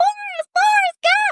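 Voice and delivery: very high, loud calling out. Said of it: "she's like".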